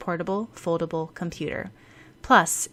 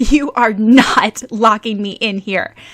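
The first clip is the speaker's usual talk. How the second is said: very loud, anguished wail; 4 semitones higher, 13 dB louder than usual. Reading a story, a tied-up girl protests being locked in: wailing. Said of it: "Mei Lin wailed".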